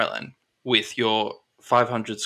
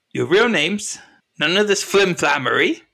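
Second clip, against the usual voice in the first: put-on shrewd shopkeeper voice, pitched-up, demanding; 7 semitones higher than usual. Game master voicing a character speaking to the players, in a put-on character voice.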